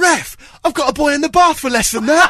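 very loud, all-out, high-pitched shout. Recounting what a man shouted at the ref from the dugout, retelling a shout. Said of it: "shouts at the top of his voice".

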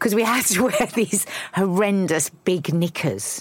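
speech breaking into giggles, laughing through the words. Recalling school PE clothes after getting emotional, laughing while talking. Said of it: "I'm gonna laugh now".

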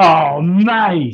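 very loud, booming, high, stagey amateur-theatre overacting. Giving a football exclamation when asked, amateur dramatics delivery. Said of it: "Some real Amdram from Burdo there on stage".

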